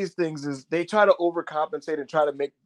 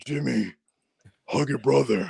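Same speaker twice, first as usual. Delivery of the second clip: put-on rough, creaky voice; 3 semitones lower than usual. Imagining Roman stepping in to tell Jimmy to hug his brother, Roman impression. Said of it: "Why are you guys talking like that?".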